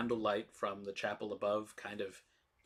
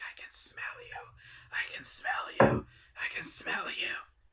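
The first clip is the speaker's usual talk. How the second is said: slow, loud, hissing whisper, muttered low; 6 semitones lower, 6 dB louder than usual. Voicing the figure repeating a phrase to himself: hissing to himself. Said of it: "hiss to himself".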